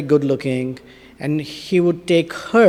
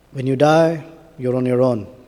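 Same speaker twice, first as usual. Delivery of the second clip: cold, flat, unfeeling, businesslike, matter-of-fact; 3 semitones lower than usual. Retelling the fourth wife's answer to her dying husband: cold matter-of-fact voice. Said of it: "in a very cold, matter-of-fact manner".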